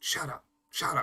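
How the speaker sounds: very quiet, breathy whisper under the breath. A character hushes a creature that is cursing at them, speaking very quietly. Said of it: "just kind of very quietly in Abyssal".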